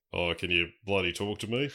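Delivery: put-on quiet, dry New Zealand accent. Asked for your best, play the movie scene of talking to the parrot, Doctor Alan Grant impression. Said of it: "do your best, Doctor Alan Grant impression".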